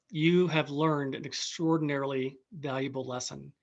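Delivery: ordinary talk, nothing marked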